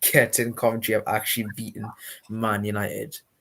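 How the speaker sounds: plain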